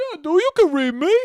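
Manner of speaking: very high, loud dumb-sounding voice. Making up how Frankenstein talked in the movie, dumb Frankenstein voice. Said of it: "Sounds like a dumb version of my dad, that voice".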